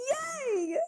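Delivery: put-on very high child's cheer, word "yay" drawn out long. Retelling a kid's reaction to the cheerleading question: imitating a kid cheering. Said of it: "there's the one or two kids that goes".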